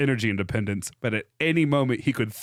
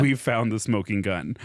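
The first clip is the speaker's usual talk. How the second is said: usual speaking voice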